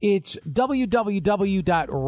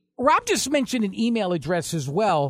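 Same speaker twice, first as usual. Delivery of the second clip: normal talking voice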